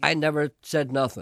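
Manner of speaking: ordinary talk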